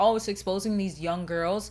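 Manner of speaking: ordinary delivery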